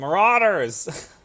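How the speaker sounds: loud, long, drawn-out yell.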